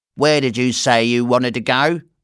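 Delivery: gruff taxi driver voice. Narrator reads the cab driver's question to the Browns in a gruff voice. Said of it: "a gruff voice said".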